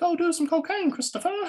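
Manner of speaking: put-on little British girl voice, very high. Showing how an addiction's voice speaks: little British girl voice. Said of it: "Christopher's is like a little British girl".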